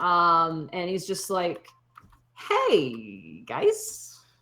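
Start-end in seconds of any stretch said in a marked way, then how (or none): 2.3-4.1 put-on sleepy, groggy, tipsy, drunk-sounding voice. Voicing a groggy character who greets the group: groggy, tipsy voice. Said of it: "he looks like he's probably about three drinks in".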